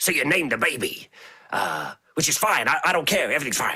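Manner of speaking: gravelly rock-monster voice, words ground out. Retelling a comic scene about a new baby: the Thing's voice. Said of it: "So it's gravelly".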